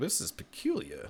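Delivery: badly done, hushed, prissy robot whisper. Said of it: "Terrible three P O impression".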